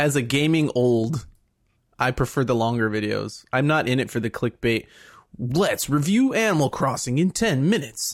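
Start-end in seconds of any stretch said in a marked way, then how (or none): 5.4-8.1 hyperactive, very energetic delivery. Mocking clickbait gaming reviewers, hyperactive YouTuber voice. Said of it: "Hyperactive voice like this all the time".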